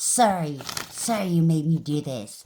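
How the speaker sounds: put-on hostile, begrudging tone. Imagining how an owed apology would be given, mock begrudging apology. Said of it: "given to you begrudgingly, hostilely".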